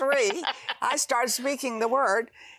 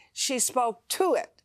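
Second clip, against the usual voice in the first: ordinary talk, nothing marked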